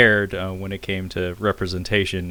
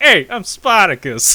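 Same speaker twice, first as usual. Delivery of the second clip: put-on Brooklyn accent, loud and high; 12 semitones higher, 8 dB louder than usual. Retelling a movie scene where one guy stands up: Brooklyn accent. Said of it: "has, like, a Brooklyn accent".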